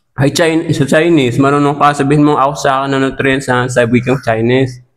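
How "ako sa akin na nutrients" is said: plain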